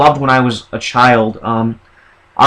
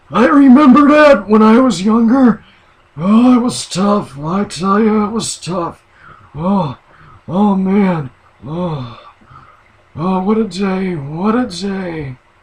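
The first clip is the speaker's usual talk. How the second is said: put-on elderly man's voice, pitched higher; 6 semitones higher than usual. Describing a man's sixth personality, an old man, in an old man voice. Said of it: "as an old man".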